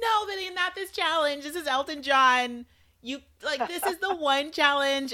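very high, exasperated scolding shout. Retelling what was yelled at the TV: imitating her own past yelling. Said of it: "I was yelling".

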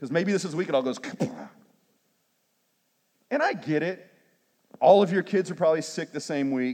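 tongue-in-cheek, sarcastic, needling jab. Preaching about people arriving late to church: sarcastic. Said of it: "And I'm being sarcastic".

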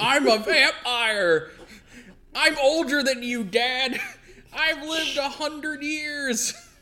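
play-acted very high, shrill, angry, moody teen yell. Acting out a villain as a moody teen: Dio as angry teen yelling at dad. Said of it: "like an angry, moody teen, like, yelling at his dad".

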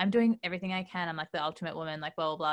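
ordinary delivery

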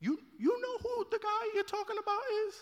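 very high-pitched, soft, held-back voice. Retelling the Bible story where Ananias is sent to Paul, high-pitched Ananias voice. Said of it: "His voice gets high-pitched just like that".

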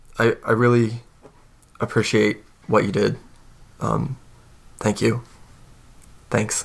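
awkward grateful character voice. Voicing a character who awkwardly thanks someone: awkward grateful character voice. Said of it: "he smiles a little bit and he goes".

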